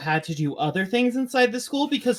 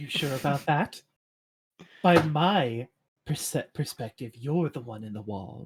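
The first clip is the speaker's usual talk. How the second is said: slithery, spooky voice, lower pitch; 5 semitones lower, 3 dB quieter than usual. A figure who slipped in through the walls replies, slithery, spooky voice. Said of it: "very slithery and spooky".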